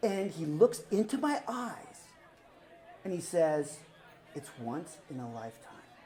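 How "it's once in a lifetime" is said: very low, very quiet, earnest, serious hushed voice. Retelling a friend grabbing their face and looking into their eyes: speaking seriously. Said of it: "And now he's serious".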